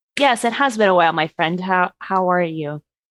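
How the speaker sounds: polite, proper, well-mannered, formal voice. Voicing a character greeting an old acquaintance: proper formal manner. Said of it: "doing, like, proper thing".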